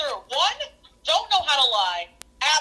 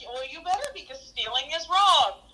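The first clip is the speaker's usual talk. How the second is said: normal talking voice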